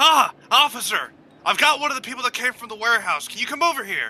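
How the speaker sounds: loud, high, muffled, gruffed-up disguised shout. A player's character disguising their voice to call an officer over, muffled gruff yell. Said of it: "muffle my voice, like, be a bit more gruff".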